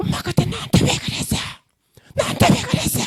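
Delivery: put-on small child's voice, done exactly. Acting out a shaman channeling a drowned child who calls to the mother: child's voice. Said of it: "이 아이 목소리를 그대로 내는 것입니다".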